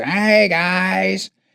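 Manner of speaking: put-on small crackly elderly voice. Recalling an elderly neighbor walking through the restaurant greeting everyone, little crackly voice. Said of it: "in his little crackly voice".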